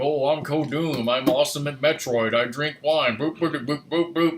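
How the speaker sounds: loud bragging voice. Acting out a streamer friend drinking wine: imitating Kodoom. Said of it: "that's how he sounds, right?".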